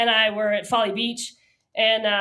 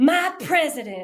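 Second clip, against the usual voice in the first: put-on Southern American accent, pitched up; 5 semitones higher than usual. Retelling what a woman said in reply, Southern accent. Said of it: "I'm doing like the Southern accent, right?".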